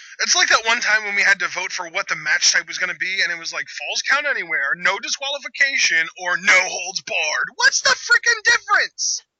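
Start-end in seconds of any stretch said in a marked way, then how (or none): 7.6-9.2 put-on high-pitched, squeaky little kid whining voice. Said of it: "in, like, a little kid voice".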